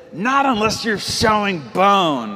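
words forced through gritted teeth. Retelling a dad's words to a player begging to leave the game, through clenched teeth. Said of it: "clenched teeth, spitting through it".

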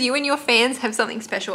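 usual speaking voice

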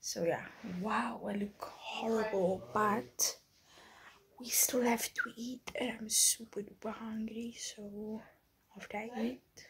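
soft, unvoiced whisper. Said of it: "so I'm whispering".

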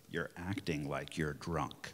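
put-on gentle scolding in a very low voice. Retelling what Bob said to the speaker while walking down the street: imitating Bob's slightly reproving voice. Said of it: "he says in a slightly reproving voice".

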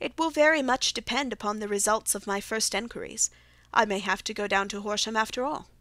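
plain reading voice

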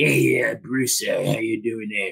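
acted elderly male voice. Showing how often a wrestling legend is imitated: Stu Hart impression. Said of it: "Stu Hart is the most imitated man".

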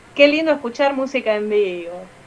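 ordinary talk

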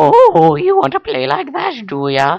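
eerie put-on Irish accent, very high. Talking back to the game after not going up a level, in a really creepy Irish voice. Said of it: "That's like really creepy Irish".

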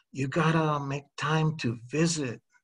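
soft, hushed, earnest stage half-whisper. Narrator reads the other person's line to the narrator, half-whispering. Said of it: "you whisper".

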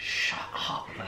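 voiceless whisper.

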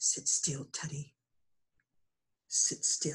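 hushed whispering. Teddy's father, under threat, speaks to Teddy in a whisper. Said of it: "all his father could do was to whisper".

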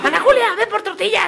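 very high, yelled shout. Telling how a child repeated what he heard from the speaker's house: retelling a child's shout. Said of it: "gritaba cosas que escuchaba".

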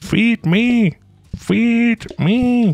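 very high, very slow, drawn-out made-up character voice. Voicing Nuba waiting to be fed, in the Nuba voice. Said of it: "that's my Nuba voice today".

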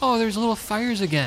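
high-pitched mocking voice.

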